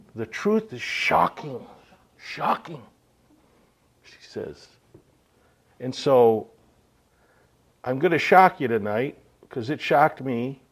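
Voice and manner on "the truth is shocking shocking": put-on Australian accent tinged with Dutch. Quoting Martha's words to the audience, in Martha's Aussie Dutch accent. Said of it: "with her Aussie Dutch accent".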